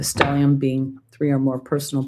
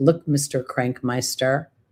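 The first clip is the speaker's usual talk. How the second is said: plain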